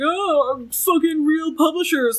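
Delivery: high, slow, mocking caricature voice. Imitating what she says, in a straw man voice. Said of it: "in her, like, straw man voice".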